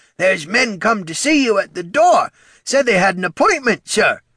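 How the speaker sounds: very high, loud, croaky voice. Narrating a young slaw telling Poldo that men are at the door, croaking. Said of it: "he croaked".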